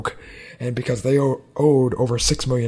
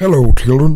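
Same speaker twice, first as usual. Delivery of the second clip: booming, very loud character voice, belted out; 2 semitones higher, 12 dB louder than usual. Doing a Chef impression for the other speaker: Chef impression. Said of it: "my one and only chef impression".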